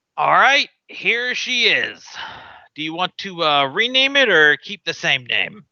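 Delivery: put-on seasoned, older pirate sea captain voice. Voicing an older pirate captain selling a ship: older pirate captain voice. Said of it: "this older, uh, pirate captain goes".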